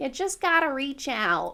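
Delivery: put-on slight Wisconsin or Minnesota accent. Discussing a character, the speaker imitates the sister-in-law's Wisconsin or Minnesota accent. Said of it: "Her little Wisconsin or Minnesota accent".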